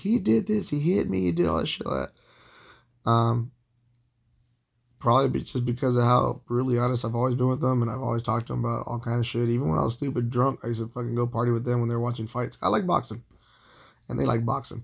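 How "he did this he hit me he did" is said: raw, ragged, high-pitched, rough screaming outburst. Retelling what she said to the neighbors: imitating someone screaming. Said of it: "she's screaming at them now".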